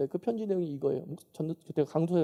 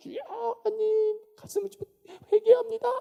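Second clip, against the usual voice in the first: weeping, tearful voice, pitched very high. Retelling girls praying upstairs at a worship meeting: imitating tearful prayer. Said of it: "막 눈물 흘리면서".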